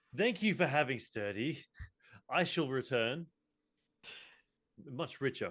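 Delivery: high, proclaiming tone of voice. Speaker retells getting up and announcing very loudly. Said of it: "announce very loudly".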